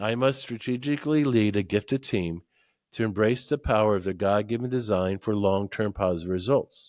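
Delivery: ordinary delivery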